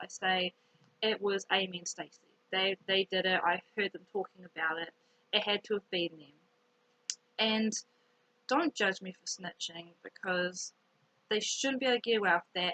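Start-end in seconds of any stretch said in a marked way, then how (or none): none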